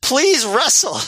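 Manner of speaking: very high put-on shout. Retelling what a fan in the crowd kept yelling: imitating a fan yelling. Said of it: "there's one guy that keeps yelling".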